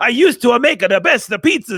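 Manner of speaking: loud, high, put-on Italian accent. Showing how a pizza line should be read like an italian guy, mock italian accent. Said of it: "read it like an Italian guy".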